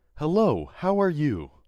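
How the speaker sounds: cheerful dumb AI voice. Speaker showing the voice they do to annoy people: dumb AI voice. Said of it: "the voice I do is like very A I dumb voice".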